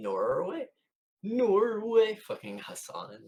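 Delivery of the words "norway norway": awful, put-on Norwegian accent, very high pitched. Speaking to a chat about norway, in the worst norwegian accent impression. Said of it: "it's like the worst impression".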